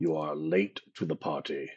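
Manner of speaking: rough, creaky, raspy voice with swinging pitch. Voicing a Strahd zombie that hears commotion and walks up: Strahd zombie voice. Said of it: "starts to walk up and says".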